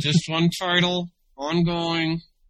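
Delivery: spoken through clenched teeth. Discussing how comics are published in short series, through clenched teeth. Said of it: "through clenched teeth here".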